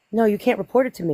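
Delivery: mock straight-faced, deadpan delivery. Retelling an officer's reply to a report: imitating a straight-faced reply. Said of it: "straight-faced looked me in the face".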